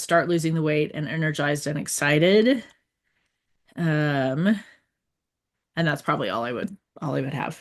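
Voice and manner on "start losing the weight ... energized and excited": ordinary talk, nothing marked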